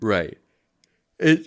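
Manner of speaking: words spoken through a yawn. Past eight on a work night, chatting about making videos, yawning. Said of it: "Sorry, I'm yawning".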